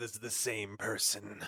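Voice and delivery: put-on scary, frightening voice. Voicing a character in a role-play story: scary voice. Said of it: "That was my scary voice".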